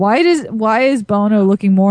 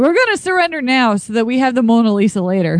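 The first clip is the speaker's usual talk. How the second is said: ordinary delivery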